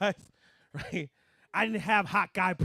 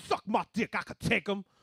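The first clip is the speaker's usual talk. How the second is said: acted out, firm, dead-certain, with total conviction. Retelling how mom answered about the man: imitating mom saying it with conviction. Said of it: "She said it with such conviction".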